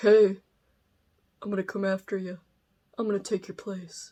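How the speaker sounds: put-on sinister, menacing, creepy old man voice. Voicing the creepy kid on a book cover: creepy old man voice. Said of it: "he sounds like a man in my impersonation, like some creepy old dude".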